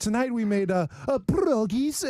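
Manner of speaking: exaggerated foreign-style pierogies. Mocking a lady saying a foreign food name: imitating a lady's over-pronounced accent.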